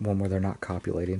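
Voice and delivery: ordinary talk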